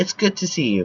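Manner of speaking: ordinary delivery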